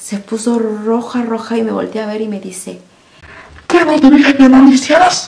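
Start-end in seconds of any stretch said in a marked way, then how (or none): 3.7-5.3 furious, angry raised shout. Retelling how the mother-in-law yelled at the speaker over the car seat, retelling an angry yell. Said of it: "gritándome, roja, enojada".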